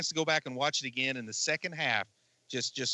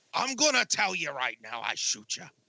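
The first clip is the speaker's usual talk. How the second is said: put-on generic American cop accent. Imitating an actor's American accent in his films: Gerard Butler's American cop accent. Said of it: "I call it a cop accent".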